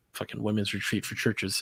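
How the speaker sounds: breathy, scornful, contemptuous half-whisper. Describing women's ministry at churches, said with contempt. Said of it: "You said it with contempt".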